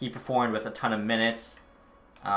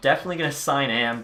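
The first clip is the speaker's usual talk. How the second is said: plain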